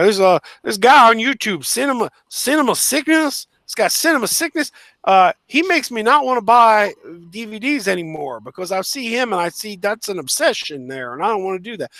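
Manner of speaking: poor put-on Kentucky accent. Imitating a man talking about a YouTube reviewer, horrible Kentucky accent. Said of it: "I know that is a horrible Kentucky accent".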